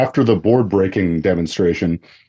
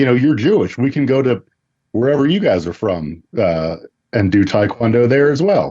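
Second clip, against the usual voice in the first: normal talking voice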